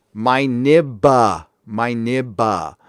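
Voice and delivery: careful, deliberate word-by-word delivery, very slow. Reading a message aloud, careful so nobody gets mad: saying it very slowly. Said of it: "I got to say this very slow".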